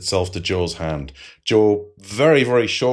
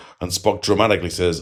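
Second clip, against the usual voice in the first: plain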